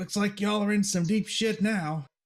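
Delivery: high-pitched, hollering bandit-style voice. Voicing bandits taunting the party: bandits hollering. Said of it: "holler and be like".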